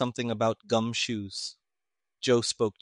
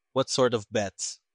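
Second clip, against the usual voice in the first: plain reading voice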